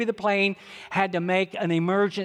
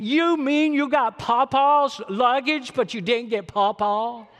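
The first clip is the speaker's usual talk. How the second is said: put-on high, upset, dramatic four-year-old girl voice; 5 semitones higher than usual. Retelling an upset four-year-old questioning her dad: imitating a dramatic little girl. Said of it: "she's pretty dramatic in her personality".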